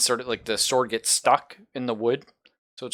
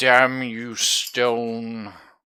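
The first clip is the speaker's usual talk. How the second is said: raspy, hollow voice, "stone" drawn out; 4 dB louder than usual. A game narrator voices a character after a missed swing, raspy and hollow voice. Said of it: "His voice comes out raspy and hollow".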